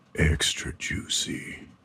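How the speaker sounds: slow, drawn-out, drawling whisper. Coaching the other speaker to repeat a phrase as said on the phone, slower delivery. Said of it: "it was slower".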